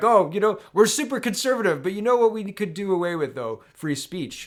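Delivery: snide, mocking politician voice. Mocking conservatives who pretend to be friends: imitating conservatives. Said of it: "They're like".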